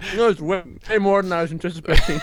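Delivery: very high voice, speaking with mouth full of candy. Answering another speaker mid-snack, talking with a mouth full of gummy bears. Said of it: "now I actually have gummy bears in my mouth".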